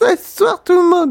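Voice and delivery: boozy, tipsy woman's voice, pitched very high. Imagining a woman drinking in the bathroom doing a voiceover, a speaker imitates a drunk woman. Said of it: "Elle serait en train de picoler".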